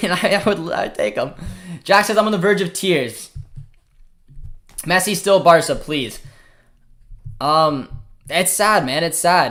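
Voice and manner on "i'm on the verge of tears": ordinary talk, nothing marked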